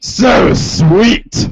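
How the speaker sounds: loud, high, booming caped superhero voice. Reading John's lines in a Batman voice. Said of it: "reading John Egbert as Batman".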